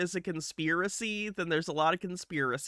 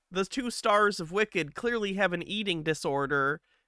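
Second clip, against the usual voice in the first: ordinary talk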